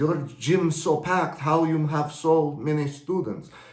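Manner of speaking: put-on spoken with a Russian accent. Retelling what a rival gym owner asked: russian accent. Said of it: "she had a Russian accent".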